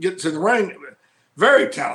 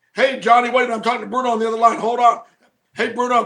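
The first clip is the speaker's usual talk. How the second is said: put-on busy, distracted phone voice, higher pitch; 4 semitones higher than usual. Retelling how a friend always interrupted phone calls: imitating Corey Macklin. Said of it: "he'd be like".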